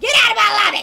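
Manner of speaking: high, loud mock shout.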